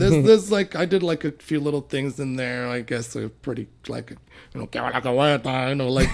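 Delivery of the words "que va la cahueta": put-on Cuban-style Spanish accent. Doing an impression of a cuban guy: put-on cuban accent. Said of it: "impression of a Cuban guy".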